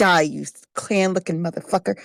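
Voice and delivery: hushed whisper. Player casting Vicious Mockery in a tabletop game, as a whispered insult. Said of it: "whisper in it".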